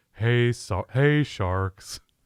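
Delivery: very slow, droopy, glum drawl. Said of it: "you did a Paul Chryst impression".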